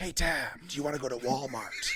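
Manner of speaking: hushed half-whisper with no voice throughout. Retelling how you talked to Tab when your voice was gone, Batman half-whisper. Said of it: "I had to whisper everything".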